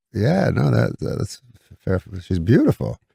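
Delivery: plain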